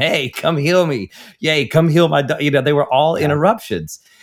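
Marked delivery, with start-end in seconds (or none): 0.0-2.2 mock calling out, loud yelling. Telling how people interrupted a miracle worker on his way, retelling someone yelling. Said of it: "somebody would start yelling at him".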